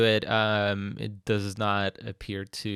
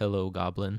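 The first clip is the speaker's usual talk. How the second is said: ominous, sinister, foreboding voice; 3 semitones lower, 4 dB quieter than usual. Game master voicing a motionless being greeting the players, in an ominous voice. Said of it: "in a, a kind of ominous uh, voice".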